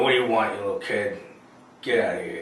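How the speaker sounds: rough, gruff biker voice. Acting out a former mall Santa on a Harley shooing a kid: biker mall Santa. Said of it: "and he's still got the beard, but he's, like, wearing a leather jacket and leaning on a, a Harley, like, smoking a stogie, going".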